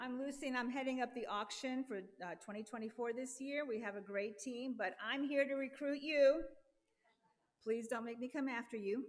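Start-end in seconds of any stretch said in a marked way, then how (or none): 7.6-9.0 put-on motherly voice. [name], heading up the auction, recruits Goof for donations: using her mother voice. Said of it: "I'm using my mother voice".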